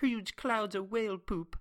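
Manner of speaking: showy, relished put-on British accent. Telling how a guy described whales pooping, imitating the guy's amazing British accent. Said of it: "the guy's got this amazing British accent. He's like".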